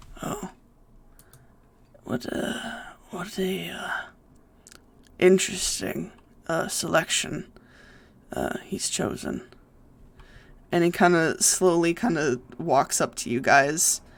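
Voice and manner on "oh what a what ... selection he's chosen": whispered, airy, breathy lich-like saint voice. Voicing a large saint who slow blinks at the players: voicing a lich-like saint. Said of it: "he kinda slow blinks at all of you and he goes".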